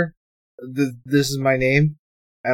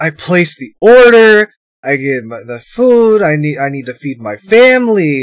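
put-on drama, higher and louder; 3 semitones higher, 7 dB louder than usual. Retelling a customer complaining about his food order, mock-dramatic customer. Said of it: "he's getting all dramatic".

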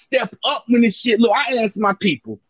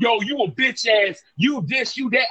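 ordinary delivery

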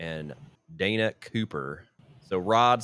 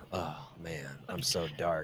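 low, very quiet, barely audible gloomy mutter; 4 semitones lower, 11 dB quieter than usual. Describing a show character who tries to talk dark: mocking Rod as emo guy. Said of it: "kind of emo-y kind of douchey guy".

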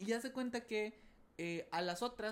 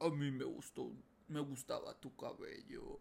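very low, nasty, sinister, creepy voice; 7 semitones lower than usual. Retelling a scene where someone speaks to Karen, in a nasty creepy voice. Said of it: "con una voz así de que, ¿sabes? Bien culera".

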